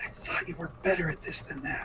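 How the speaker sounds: breathy, hushed stage whisper. Coltash whispers to Claudia, thinking he is soft: Coltash's loud stage whisper. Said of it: "Coltash will kind of whisper to Claudia".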